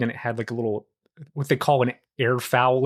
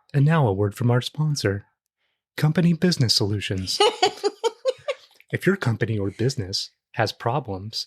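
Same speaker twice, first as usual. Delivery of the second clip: mock corporate advertisement announcer read. Riffing with another speaker on corporate talk, doing a mock corporate ad read. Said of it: "Just like the corpo talk".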